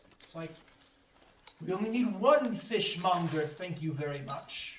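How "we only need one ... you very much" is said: stern, severe, strict no-nonsense voice. A game narrator voices someone calling from the building over the commotion, in a stern voice. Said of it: "from the building you hear a stern voice".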